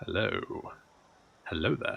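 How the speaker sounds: put-on sexy, seductive voice. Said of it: "I'm doing it in a sexy voice".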